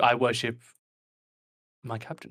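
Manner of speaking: ironic, sarcastic delivery. Voicing a character who speaks of his captain: sarcastic. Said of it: "he's being sarcastic to you".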